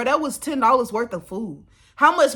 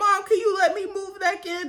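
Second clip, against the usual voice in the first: play-acted high, tearful crying voice; 9 semitones higher than usual. Imagining calling mom to ask to move back: mock crying. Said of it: "called my mom crying".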